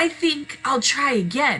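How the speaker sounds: bright, cheery, cheerful, pitched well up. Narrator reading Wilbur the pig's reply to Charlotte, cheerful. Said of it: "said Wilbur cheerfully".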